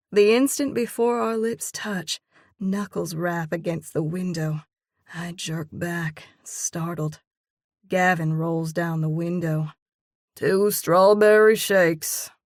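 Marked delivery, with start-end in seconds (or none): 10.3-12.2 put-on bored, uninterested teenage tone, raised. A teenage boy at the truck window announcing an order, bored tone. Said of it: "the teenage boy says in a bored tone".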